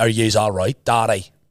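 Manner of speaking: put-on Northern Irish accent. Comparing how southern and northern Irish kids ask their daddy things, Northern Irish accent. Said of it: "In the north, it's like".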